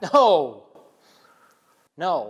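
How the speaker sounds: forceful, firm, fully meant, with swooping pitch. Urged to stand up to their father and say it again, the speaker says it forcefully. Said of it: "Say it like you mean it".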